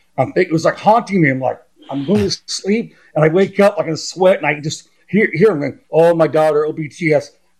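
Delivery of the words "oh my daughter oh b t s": normal talking voice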